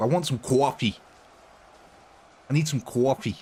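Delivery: put-on Wisconsin-style Midwestern accent. Speaker tries out American regional accents, doing a Wisconsin one: Wisconsin accent. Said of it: "Or is it Wisconsin, where they go".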